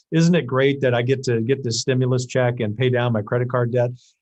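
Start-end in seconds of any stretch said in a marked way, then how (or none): none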